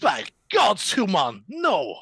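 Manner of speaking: put-on fantasy elf wizard voice. Players trying out character voices for their parts, elf wizard voice. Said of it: "Sounds about right".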